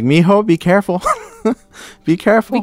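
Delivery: put-on loud, excited voice. Retelling a mother's warning about young blood: imitating loud excited mother. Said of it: "She's like".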